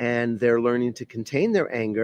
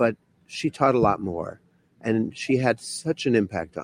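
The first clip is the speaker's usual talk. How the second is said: choked up, emotional, catching on the words. Speaker remembering a meditation teacher in her eighties, choking up. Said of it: "I'm choking up".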